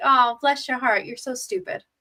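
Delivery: sweet, sugary, sarcastic tone. Explaining what a southern phrase really means, saying it in a sarcastic tone. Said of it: "it's like sarcastic".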